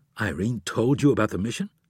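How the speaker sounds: ordinary delivery, nothing marked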